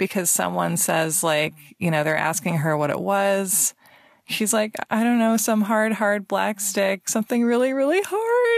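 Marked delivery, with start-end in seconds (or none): 4.9-8.6 put-on high swooping voice jumping registers, breaking into crying. Retelling what an injured skater said when asked about it: imitating someone breaking into crying. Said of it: "her voice just sort of, like, jumps registers into crying".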